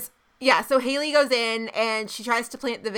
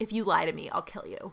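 soft, dead-calm, chill whisper; 4 semitones lower, 8 dB quieter than usual. Recapping a show scene where one character threatens a woman, imitating a super calm voice. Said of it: "super calm voice".

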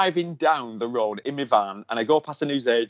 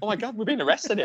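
put-on, high, amused, giggling, laughing disbelief; 7 semitones higher, 4 dB quieter than usual. Retelling being read their rights back at the van, laughing. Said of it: "which I'm like laughing going".

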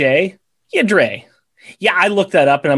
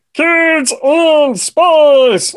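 squeaky, very high puppet voice; 10 semitones higher, 4 dB louder than usual. Reading out a listener's shout-out on the podcast, in a Muppet Show voice. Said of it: "Muppet Show voice".

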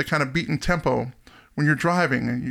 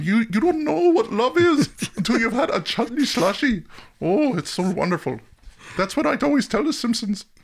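gushing cartoon store-clerk character voice; 8 semitones higher than usual. Retelling a bit from The Simpsons, doing an Apu impression. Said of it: "That's my best Abu".

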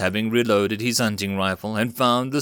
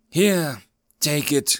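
wheezing, higher pitch; 5 semitones higher than usual. Reading a story, the narrator voices Alex offering Ricky a flask, wheezing. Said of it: "he wheezed".

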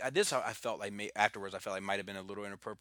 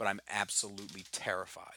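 usual speaking voice

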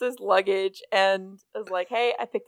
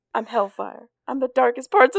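put-on tiny little kid's voice; 4 semitones higher, 4 dB louder than usual. Retelling a story's scene, imitating a tiny child. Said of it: "this tiny child just going".

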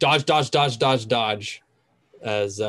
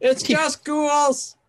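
mock shouting, acted shout. At a tabletop game, a player repeats another player's call down the hall, mock-shouting. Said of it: "You're just shouting that down?".

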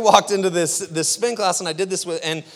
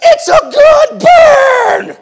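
slow, booming, very loud, very high yell, "burn" stretched; 13 dB louder than usual. Amid loud music and yelling, retelling what she suddenly yelled out, retelling a yell. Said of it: "And then she yells out of nowhere".

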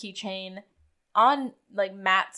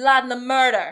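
loud, put-on attempted Jamaican accent; 4 semitones higher, 7 dB louder than usual. Asked to repeat the chief's line, this time in a Jamaican accent. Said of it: "but this time with a Jamaican accent".

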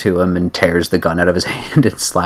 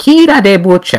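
mincing, effete, affected delivery; 12 semitones higher, 5 dB louder than usual. Mimicking how a man always says his own name: affected, effete voice. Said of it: "he talks like this, how is it? He always says his name sort of, like, very effeetly".

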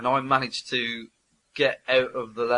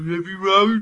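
put-on much higher Birmingham accent; 8 semitones higher, 7 dB louder than usual. Recalling what you said when that happened, in a very Brummy accent. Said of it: "that was very Brummy".

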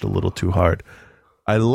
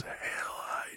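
soft, raspy voice rasped out in a whisper. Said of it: "in that raspy voice".

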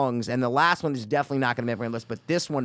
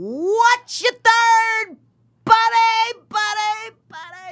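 put-on old-school buddy tone, very high, very slow; 8 dB louder than usual. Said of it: "just that tone".

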